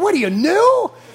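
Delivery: put-on Yiddish-inflected accent.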